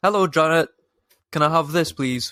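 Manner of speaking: quick, light, rattled-off mild shout. Explaining how weird it feels to call an adult by name, mock shouting. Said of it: "than shout".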